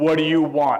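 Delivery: big, brash, loud voice. Retelling a pageant innkeeper's line to Joseph: Wallace's big brash voice. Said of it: "In a big, brash voice that he could muster".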